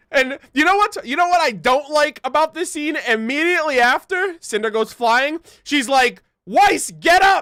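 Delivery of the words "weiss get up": yelling, high pitch. Retelling a scene where Blake yells at Weiss: imitating Blake yelling at Weiss. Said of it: "did Blake just really yell at Weiss?".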